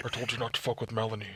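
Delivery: low, very quiet, barely audible horror villain voice. Imagining someone speaking to a man he has tied up, Saw voice. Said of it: "he has the saw voice".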